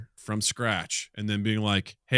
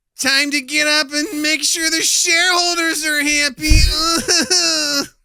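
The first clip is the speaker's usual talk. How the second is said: very high, loud, very slow, drawn-out agony-ecstasy wail; 9 dB louder than usual. Doing a wake-up call voice: put-on voice half agony, half ecstasy. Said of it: "half in agony and half coming".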